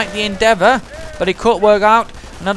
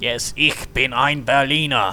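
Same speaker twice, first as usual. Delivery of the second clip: very low, hushed put-on German accent; 8 semitones lower, 5 dB quieter than usual. Commentating a battle, voicing American medics trying to pass as German: fake German accent. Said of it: "despite their best attempts at a fake German accent".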